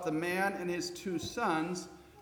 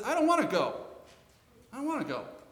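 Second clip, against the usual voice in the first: put-on high, rushed, stubborn toddler voice; 6 semitones higher, 3 dB louder than usual. Telling a parable of two sons, voicing the first son, sounding like a two-year-old. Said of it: "sounding remarkably like a two-year-old".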